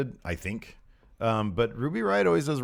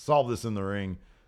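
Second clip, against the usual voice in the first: ordinary talk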